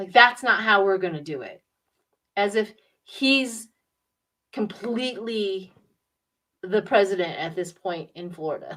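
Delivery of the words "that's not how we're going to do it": pissed-off, angry, dismissive outburst. Describing a man who throws the paper back: imitating someone angry. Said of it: "He gets all pissed off and throws it".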